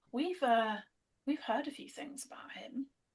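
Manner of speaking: hushed confiding tone. Telling Gabrielle what they've heard about him, in a lowered voice. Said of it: "I'm gonna kind of like lower my voice a little".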